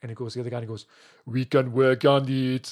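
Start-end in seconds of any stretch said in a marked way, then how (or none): 1.3-2.7 put-on Southwest American accent, drawled loud and very slow. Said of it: "he uses the voice".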